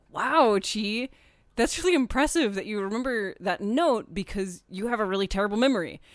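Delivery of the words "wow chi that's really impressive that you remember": plain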